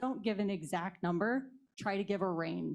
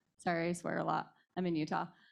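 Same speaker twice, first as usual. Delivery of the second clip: ordinary talk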